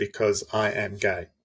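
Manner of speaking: ordinary delivery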